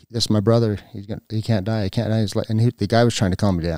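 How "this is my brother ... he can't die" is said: plain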